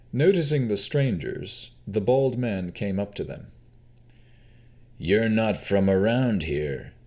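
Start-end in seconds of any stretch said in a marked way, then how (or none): 4.9-6.8 gruff-voiced, matter-of-fact delivery. A bald man addresses strangers who have just arrived; gruff voice. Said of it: "he stated in a gruff voice".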